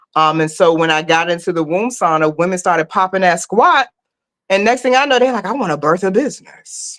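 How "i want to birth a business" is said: grand, theatrical put-on voice. Retelling what women at a womb sauna said, in a put-on voice for quoted women. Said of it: "I don't know why I do that voice".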